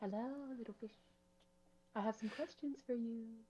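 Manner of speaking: half-whispering, hushed, voice barely there. Voicing a character who speaks to fish in the water: half-whisper. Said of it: "go close to the surface and just whisper".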